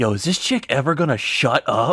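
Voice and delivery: half-voiced, stage half-whispered side remark. Retelling what a guy next to him half-whispered to his friends, half-whispering. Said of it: "whispers to his friends and goes".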